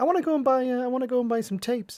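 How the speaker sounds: very high put-on American accent. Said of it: "last time I did this accent".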